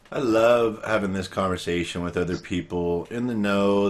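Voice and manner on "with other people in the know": ordinary talk, nothing marked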